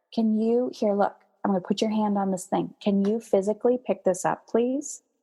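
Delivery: soft, gentle, softened voice. Demonstrating how they would ask someone to pick the thing up, in a softer voice. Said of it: "I'm softer".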